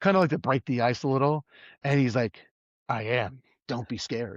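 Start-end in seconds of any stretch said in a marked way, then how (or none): 2.9-4.4 put-on creepy, eerie voice, quieter, slower. Retelling a tour guide's reply to a question: imitating a creepy voice. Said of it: "he was like so creepy about this".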